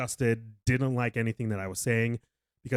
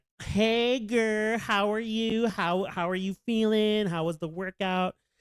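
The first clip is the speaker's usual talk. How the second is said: very high, put-on, fake cheerful friendly energy; 11 semitones higher than usual. Retelling greeting a client back, imitating own fake cheerful greeting. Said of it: "I met her with that fake energy".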